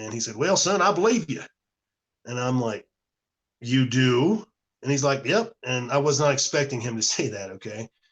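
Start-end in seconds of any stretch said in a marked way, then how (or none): 0.4-1.4 put-on heavy Kentucky accent, laid on thick, pitched up. Retelling a man's unexpected reply after he put his pen down, in a real thick Kentucky accent. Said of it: "he had this real thick Kentucky accent".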